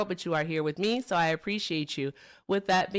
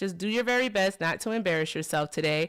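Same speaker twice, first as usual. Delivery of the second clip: ordinary talk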